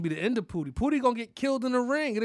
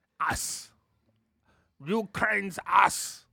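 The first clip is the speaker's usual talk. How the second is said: fake French accent, slower. Repeating a word he just said, now on purpose like a french guy. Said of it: "kind of said ass like a French guy".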